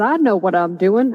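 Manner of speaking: ordinary talk, nothing marked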